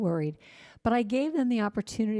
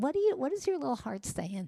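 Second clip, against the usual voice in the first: put-on tiny, childlike voice like a five-year-old; 4 semitones higher, 3 dB quieter than usual. Demonstrating an exercise, the speaker asks the question like a five-year-old: little five-year-old voice. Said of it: "Do it like you're five years old".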